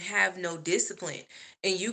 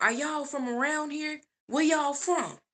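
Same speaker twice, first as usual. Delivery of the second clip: put-on street-smart little boy voice, raised pitch; 8 semitones higher than usual. Retelling what a boy asked on the street: imitating a boy who sounds streetwise. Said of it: "sound like a real little, you know, like he be in the streets".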